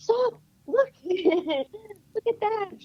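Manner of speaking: very high, shrill scream of alarm. Retelling how she screamed at the speaker to stop, retelling a scream of alarm. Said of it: "She screamed stop".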